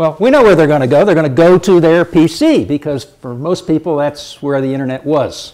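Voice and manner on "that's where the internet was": was stressed, lower and softer. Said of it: "I say was because".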